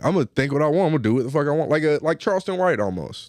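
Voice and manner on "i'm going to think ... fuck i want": ordinary talk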